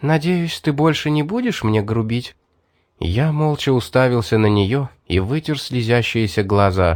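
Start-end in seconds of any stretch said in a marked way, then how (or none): 0.0-2.3 honeyed, kindly, sweet and gentle voice. Mary, having just struck the narrator, helps him up and asks; sweetly. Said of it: "она ласково спросила".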